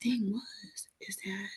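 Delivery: soft, hushed whisper. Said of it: "Why are you whispering?".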